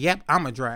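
normal talking voice

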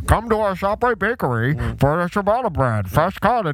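garbled, mush-mouthed, hard-to-follow mumbled speech. Imitating their manager's ShopRite loudspeaker announcement, like marbles in his mouth. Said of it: "he had like marbles in his mouth".

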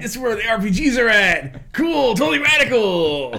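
put-on retro 1990s-style voice. Recalling getting a PlayStation, the speaker repeats the thought in a 90s voice. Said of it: "I said in my 90s voice".

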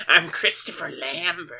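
odd, high-pitched, goblin-like voice. Mocking an actor's way of talking: Christopher Lambert impression. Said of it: "He talks like this".

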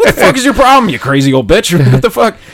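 mock raw yell, loud and high-pitched. Telling a story about his past self, the speaker re-enacts yelling at an old lady. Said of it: "I start yelling at this old lady".

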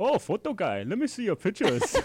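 put-on high, loud, swooping German accent. Retelling a musician greeting the photographer after the show, Rudolph's German accent. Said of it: "He was in his German accent".

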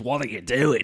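put-on shifting into an Australian accent. Retelling a film scene where an actor drops his English accent: Russell Crowe's Australian accent. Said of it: "forgets he's doing an English accent".

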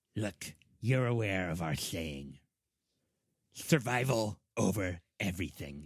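rat-like creature character voice. A game master voices the ratfolk guide speaking to a player, ratfolk guide voice. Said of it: "And he's saying this in rat folk. / and he looks back at you and he says, / He is going to lead you to this chamber that contains this door that he refers to as the singing door".

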